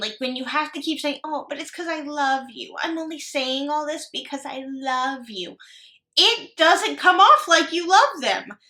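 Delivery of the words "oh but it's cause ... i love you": put-on patronising, condescending show of affection. Mocking someone's repeated reassurance in a put-on condescending tone. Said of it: "It's the condescending".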